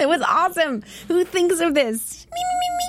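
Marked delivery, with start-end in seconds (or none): 2.3-2.9 very high, squeaky puppet voice. Talking about the Muppets, answering who thinks of this in a Beaker voice. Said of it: "I'm done with my beaker voice".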